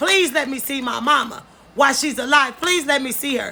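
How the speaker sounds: normal talking voice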